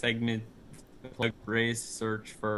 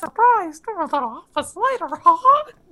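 put-on cartoon mouse voice, much higher pitch; 16 dB louder than usual. Chatting about a link in a YouTube description, the speaker uses a Mickey Mouse voice. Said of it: "not my best Mickey Mouse voice".

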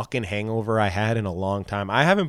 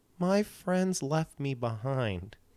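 put-on drunk older woman voice, much quieter; 4 semitones higher, 9 dB quieter than usual.

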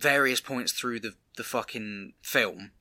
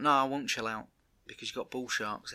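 put-on annoyance, quieter; 5 dB quieter than usual. Retelling the conservationist's reply to a man telling her to chill out: mock-annoyed. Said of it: "She gets annoyed".

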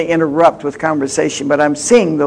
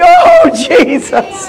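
glad, joyful, rejoicing, pitched-up exclamation; 7 dB louder than usual. Showing how to say the name Jesus: said with joy. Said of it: "Say it with joy".

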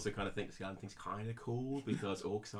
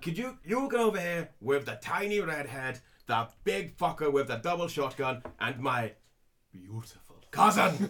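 put-on angry dwarf voice; 6 semitones higher, 9 dB louder than usual. Retelling a leader calling people over, in a mock-angry Rockseeker voice. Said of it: "led by the hot-headed and slightly angry [name] Rockseeker".

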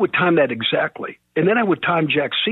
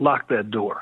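low, completely deadpan, no reaction; 5 semitones lower, 3 dB quieter than usual. Retelling what a man told them after someone walked out the door, retelling a deadpan remark. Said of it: "completely deadpan and says".

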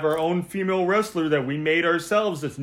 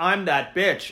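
put-on monotone, never rising or falling. Mocking how she says everything in one tone, Jade Cargill monotone. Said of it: "has a worse monotone".

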